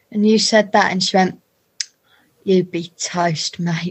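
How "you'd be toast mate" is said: slow, deliberate, drawn-out, leaning on each word. Retelling how a guest threatened another guest: imitating Anna Maxwell Martin. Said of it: "Like that".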